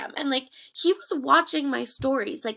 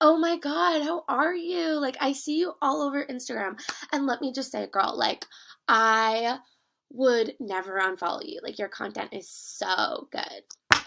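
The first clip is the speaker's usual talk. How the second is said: put-on little bratty girl voice, drawn out. Retelling an old english classmate greeting them years later: imitating a bratty girl. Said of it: "little bratty girl impression".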